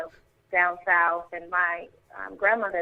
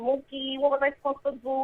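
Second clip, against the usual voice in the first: put-on high-pitched New York accent; 7 semitones higher than usual. Showing her New York accent, imitating a film character: Rosie Perez New York accent. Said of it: "kinda like a Rosie Perez".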